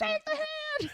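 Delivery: high-pitched shout. Retelling watching a scene from the couch; retelling yelling at the TV. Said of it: "I'm yelling at my TV".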